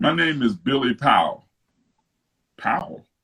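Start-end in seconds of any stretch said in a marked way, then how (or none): 0.0-1.4 put-on English accent, higher pitched. Retelling a stranger's request to be picked up, imitating Billy Powell's English accent. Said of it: "This guy's got an English accent".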